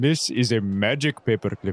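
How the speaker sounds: put-on Indian accent. Imagining David offering Finavir a trade for two casks: David in an Indian accent. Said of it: "Why is he Indian when".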